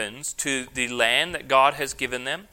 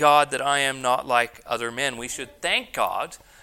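ordinary delivery

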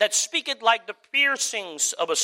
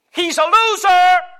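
mock shouting, higher and louder; 10 semitones higher, 10 dB louder than usual. Acting out a heckler behind the speaker: imitating someone shouting. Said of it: "behind me shouting".

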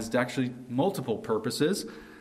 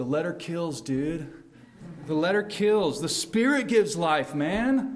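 laid-back, put-on college hippie voice; 4 semitones higher than usual. In a sermon, the speaker recalls hearing a verse said in a hippie voice. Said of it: "I had this hippie voice saying verse 6".

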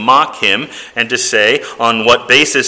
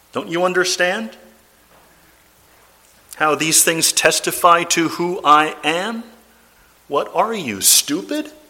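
mocking, sarcastic tone, pitched up; 6 semitones higher, 5 dB quieter than usual. Imagining a reply to the question about authority: put-on sarcastic Jesus reply. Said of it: "one can imagine Jesus giving a rather sarcastic reply".

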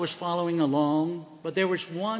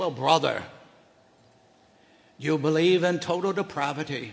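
speaking in a Scottish brogue. Retelling a man's reply to his question about limited atonement: scottish brogue. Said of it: "in his Scottish brogue".

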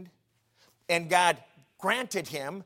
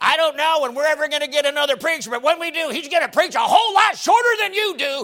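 very high, very loud, shrill sarcastic tone; 9 semitones higher, 10 dB louder than usual. Speaker quoting what a sarcastic old lady in church used to say, mock-sarcastic. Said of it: "she was so sarcastic".

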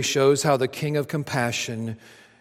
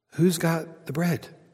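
mock whispering, higher pitched; 3 semitones higher than usual. Acting out disciples asking each other about the bread: acted-out whisper. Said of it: "they're whispering this".

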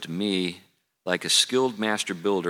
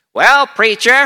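put-on elderly man's voice, very high-pitched and very loud; 14 dB louder than usual. Retelling what a man predictably said to the preacher during sermons, imitating how he talked. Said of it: "he talked like that".

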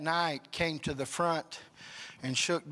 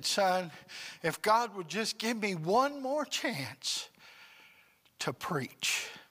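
put-on, high, tearful weeping; 5 semitones higher than usual. Retelling his dad's words from his sickbed, imitating someone crying. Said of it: "he's crying and he said".

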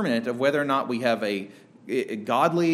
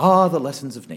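loud nature-documentary narrator voice; 6 dB louder than usual. Speaker introducing Jesus' lessons of nature, in a nature documentary narrator voice. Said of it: "It sounds like a documentary".

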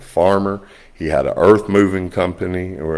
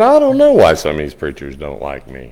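teasing, sarcastic, swooping, put-on voice; 3 semitones lower, 4 dB louder than usual. Speaker retells what he said while joking with another man, retelling a sarcastic remark. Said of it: "I was being sarcastic".

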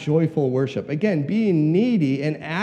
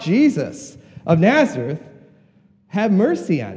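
acted-out scream, screaming out. Retelling how a man screamed out to Jesus passing by: retelling a scream. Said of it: "he screams out".

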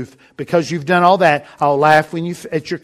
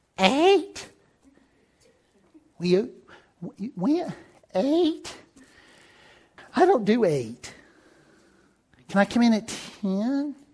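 soft, croaky, scratchy little put-on voice; 8 semitones higher, 7 dB quieter than usual. Imitating people who don't do mornings, in a scratchy little voice. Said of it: "They do that little scratchy voice".

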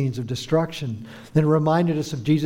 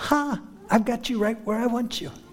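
tiny, high, squeaky mouse voice; 8 semitones higher, 3 dB quieter than usual. Comparing a boastful claim to a captured mouse taunting the cat, squeaky mouse voice. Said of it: "looking up and squeaking".

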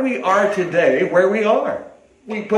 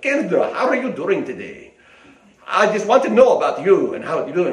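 fake, put-on Southern Russian accent; 3 semitones lower than usual. A parent retells greeting their daughter in a put-on voice; southern russian accent. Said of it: "I developed a Southern Russian accent".

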